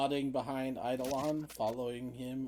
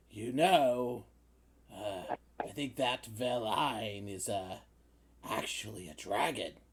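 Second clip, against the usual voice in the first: loud, booming put-on giant voice in half-whisper; 3 semitones lower than usual. A giant leans down close to Ezra and shares a secret: giant's not-much-of-a-half-whisper. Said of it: "he whispers in giant, which is not much of a whisper".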